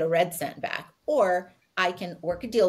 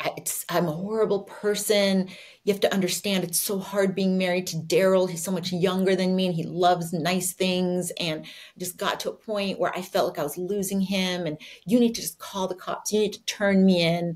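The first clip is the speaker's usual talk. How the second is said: ordinary talk, nothing marked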